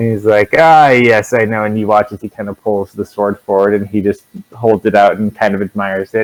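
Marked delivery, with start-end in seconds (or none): 0.6-1.6 slow, amused, knowing chuckling delivery. Voicing a character holding a sword in a tabletop scene, amused chuckle. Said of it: "he just kind of chuckles".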